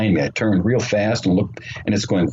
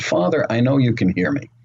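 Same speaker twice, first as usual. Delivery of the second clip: mock earnest, direct voice, projected like calling out; 3 semitones higher than usual. Retelling calling out to the Father at the ocean: recreating speaking in a loud voice. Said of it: "I said out loud in a loud voice".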